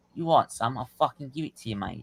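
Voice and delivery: put-on London Cockney accent. Retelling how a man from Manchester spoke to him, in Cockney accent. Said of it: "he starts talking to me in Cockney accent".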